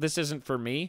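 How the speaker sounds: ordinary delivery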